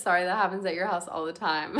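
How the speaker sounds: plain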